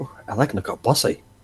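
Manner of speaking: whispered speech. Whispering in character to a companion named Riv: whispering. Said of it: "I'm just gonna whisper to Riv".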